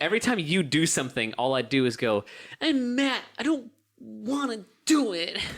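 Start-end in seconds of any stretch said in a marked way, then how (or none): 2.6-5.4 pitched-up, slow, dragged-out, lingering drawl. Showing the impression done every time the friend speaks: imitating Matt. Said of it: "my impression of you".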